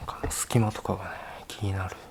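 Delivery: soft, hushed whisper.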